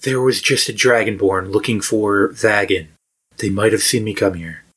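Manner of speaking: secretive, confiding tone. The game master voices tavern keeper Ricky answering a knock, Ricky's hushed voice. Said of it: "In a hushed voice".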